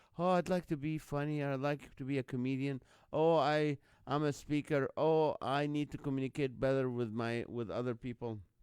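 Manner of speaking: plain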